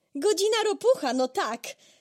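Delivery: very high, gleeful, joyful cry. Narrator reads Mole's reply to Badger, calling out joyfully. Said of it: "Zawołał radośnie Kret".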